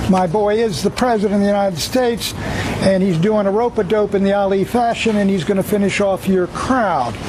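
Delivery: ordinary talk, nothing marked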